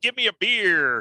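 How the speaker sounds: put-on nasal American accent. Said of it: "Kenneth Williams was doing the voice that he did".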